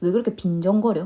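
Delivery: ordinary talk, nothing marked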